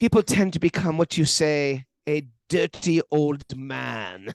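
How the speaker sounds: put-on man's German accent, words drawn out. Retelling a warning Mara gave about people his age; Mara's German accent. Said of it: "he says in that German accent".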